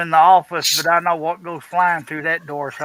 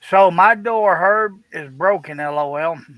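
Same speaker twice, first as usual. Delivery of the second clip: ordinary delivery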